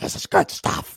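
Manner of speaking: hushed, breathy voice, almost whispered. Quoting a long-lost-son storyline as Vince: Vince impression. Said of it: "That's my Vince impression".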